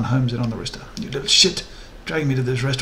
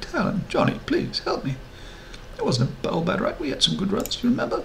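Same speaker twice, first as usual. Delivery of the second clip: tiny, very high, begging pleading voice; 9 semitones higher, 4 dB quieter than usual. Narrator reads a trapped character begging two others for help; small, pleading voice. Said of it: "His voice is small, pleading".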